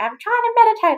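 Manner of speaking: very high, shrill, screeched snapping voice. Retelling how she answered her husband when he interrupted her meditating; retelling her own screech. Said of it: "apparently screeched at him going".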